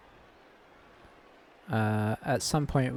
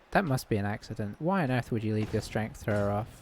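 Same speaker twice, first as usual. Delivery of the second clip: ordinary talk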